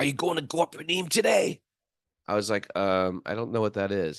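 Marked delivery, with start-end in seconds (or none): 0.0-1.6 imitated harsh voice, pitched much higher. Retelling what a man asked the speaker, imitating a harsh voice. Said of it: "he said in like a real harsh".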